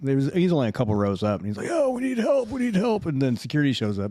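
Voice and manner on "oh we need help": mock scream, much higher and slower than normal. Telling of a guy a few rows up at a game, imitating a man screaming for help. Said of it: "some guy starts screaming, like yelling help".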